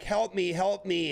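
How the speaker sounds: high, drawn-out, desperate screaming cry. Retelling how a man in a fight begged for help, imitating his screaming. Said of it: "He's like screaming like".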